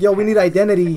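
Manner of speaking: ordinary talk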